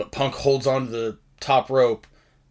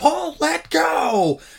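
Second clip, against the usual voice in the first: acted, strained, rough screaming yell, very high. Retelling a moment from a match: imitating Brock Lesnar screaming. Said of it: "Brock's screaming at Heyman".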